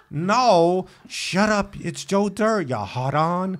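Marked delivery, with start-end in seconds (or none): 1.1-3.6 odd, shifted stresses leaning on the wrong syllables. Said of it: "he emphasizes different syllables".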